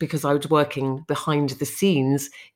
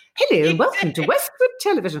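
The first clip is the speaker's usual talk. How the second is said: put-on polished elocution English, no regional accent, high, swooping; 6 semitones higher than usual. Repeating an old live television presenting line: sounding like the Queen. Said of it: "I literally sound like the Queen".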